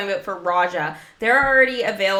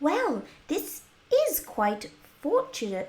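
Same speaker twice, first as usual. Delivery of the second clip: high, sing-song, swooping cartoon girl voice; 7 semitones higher, 6 dB quieter than usual. Reading a game character's dialogue aloud, doing a Wendy Darling voice impression. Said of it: "I love doing her voice impression".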